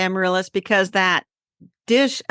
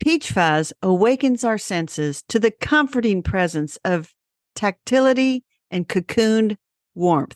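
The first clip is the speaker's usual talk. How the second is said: small announcer-style voice. Reading product copy aloud for someone, in your best little announcer voice. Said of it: "use my best little announcer voice".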